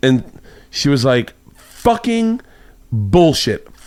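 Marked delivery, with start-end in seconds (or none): 1.6-3.6 put-on, really angry, pitched-up cursing outburst. Retelling what she said to him, imitating someone angry. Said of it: "really angry".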